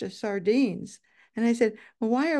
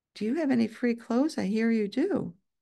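very low, timid, hushed, shy asking. Retelling how newcomers shyly asked the grandparents, imitating a very low voice. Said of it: "in a very low voice".

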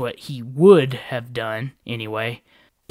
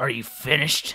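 sounding bored and uninterested; 3 dB quieter than usual. A character cuts off another's planning, sounding bored. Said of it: "sounding bored".

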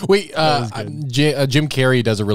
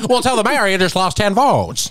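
put-on very high, old-fashioned talkie-style voice; 9 semitones higher than usual. Parodying how people talked back then, in an old-timey voice. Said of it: "why are we talking like that?".

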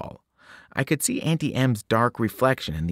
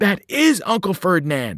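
gasping; 8 semitones higher, 3 dB louder than usual. Grover speaks up as Auntie M talks to the group, gasping. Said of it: "Grover gasped".

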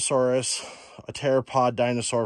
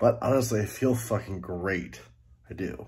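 winded, huffing and puffing, panting between words; 4 semitones lower, 4 dB quieter than usual. Speaker on the trail for their channel, huffing and puffing through it. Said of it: "I'm huffing and puffing through this thing".

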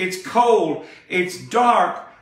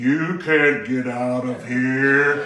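slow, low, drawn-out graveyard-like droning voice; 6 semitones lower than usual. Telling a story, the narrator voices a man in the corner speaking up: slow low graveyard voice. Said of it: "speak up in a real graveyard-like voice. He spoke slow and low".

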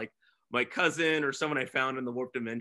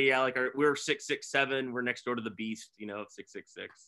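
usual speaking voice

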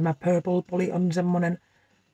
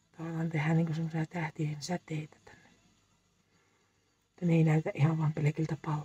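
whispered, much quieter; 8 dB quieter than usual. While painting nails, the speaker explains the design, whispering. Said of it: "Miksi mä kuiskaan?".

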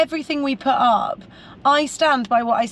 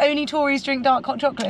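normal talking voice

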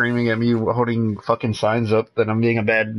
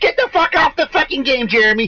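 mock yelling, higher pitched and louder; 4 dB louder than usual. Telling of a gamer's tantrum and voicing his mom, imitating a mom yelling. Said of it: "his mom yelling at him".

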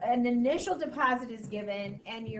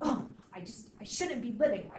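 put-on angry old man voice. Retelling what a grandpa said at seventy-seven: imitating an angry grandpa. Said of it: "He was so angry".

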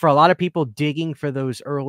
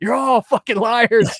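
imitated scream, higher and louder; 9 semitones higher, 5 dB louder than usual. Retelling watching reviewers praise a movie, imitating his own screaming. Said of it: "I just was screaming at my T V like".

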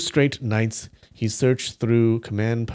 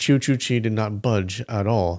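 plain reading voice

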